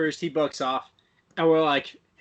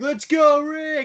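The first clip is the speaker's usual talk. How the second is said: acted, very high, all-out bleacher cheer; 10 semitones higher, 4 dB louder than usual. Retelling cheering on a rodeo rider: imitating own yelling. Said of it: "and so I'm just yelling".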